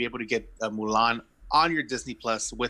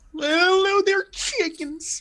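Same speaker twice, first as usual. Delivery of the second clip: very high nineteen-fifties prospector voice; 6 dB louder than usual. Joking around on a podcast, speaker switches to a 1950s prospector voice. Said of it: "I'm gonna talk like a nineteen fifties prospector now".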